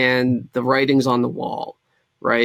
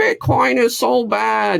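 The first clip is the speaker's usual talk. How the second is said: put-on very high, very slow, creaky, scornful old-lady voice; 10 semitones higher than usual. Mocking Elizabeth Warren's view of Bitcoin: mocking Elizabeth Warren. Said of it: "here I go mocking her".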